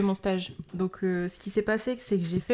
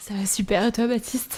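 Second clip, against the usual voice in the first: fake, smooth, suave put-on tone; 2 semitones higher, 3 dB louder than usual. Answering the podcast host who asks how they are: put-on suave voice. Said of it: "t'es pas obligé de prendre une voix suave".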